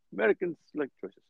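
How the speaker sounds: put-on heavy Indian accent. Speaker quoting their accounting professor, in a thick indian accent. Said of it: "thick accent".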